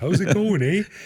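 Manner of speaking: put-on Canadian accent, pitched very high. Answering a question about having the accent: put-on canadian accent. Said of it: "Do you got the Canadian accent?".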